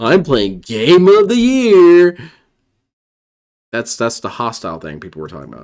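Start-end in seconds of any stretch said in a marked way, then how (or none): 0.0-2.2 acted, condescending, very loud and very slow. Mocking a streamer's clip by repeating his words: mocking DSP's condescending tone. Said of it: "Do you hear the condescension in his voice?".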